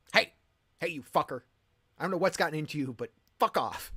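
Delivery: loud, furious, acted dad yell. Retelling yelling at a crow that swooped at Buddy: retelling an angry dad outburst. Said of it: "I had a dad outburst".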